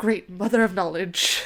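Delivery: whispered line in a man's voice. Retelling a story where a man at a desk speaks, retelling a whisper. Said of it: "The man whispers".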